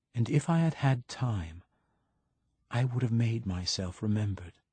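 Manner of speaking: ordinary delivery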